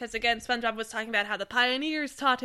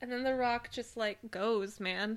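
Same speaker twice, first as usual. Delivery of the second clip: usual speaking voice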